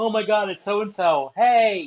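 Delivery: put-on obnoxious, shrill, loud starstruck fan screaming. Describing obnoxious fans spotting someone, imitating screaming fans. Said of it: "They'll start screaming".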